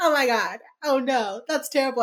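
play-acted, high-pitched, tearful sobbing through every word. Retelling a TV scene where Garcia phones Derek: imitating Garcia crying. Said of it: "Garcia's crying".

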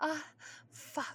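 gasped words. Narrator reads a woman reacting in an intimate scene, gasping. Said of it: "She gasped".

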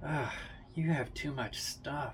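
grumbling mutter under the breath. A man opens a bedroom door and sees a stack of boxes, muttering. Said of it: "he mutters".

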